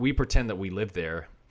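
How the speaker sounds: usual speaking voice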